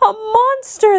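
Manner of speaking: very high, frightened, gasping cry. Reading a story, the cowering dwarves see a figure in their beds: gasped. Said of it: "they gasped".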